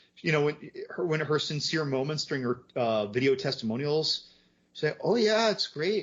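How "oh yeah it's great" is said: put-on soft Irish accent, higher. Imitating her sincere video testimonials: imitating a soft Irish accent. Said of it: "I gotta stop talking like that".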